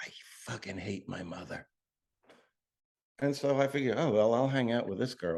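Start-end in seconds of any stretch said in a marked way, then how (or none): 0.0-1.7 whispered, very quiet, hushed. Retelling what a young woman whispered in the speaker's ear, retelling a whisper. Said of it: "She whispers in my ear".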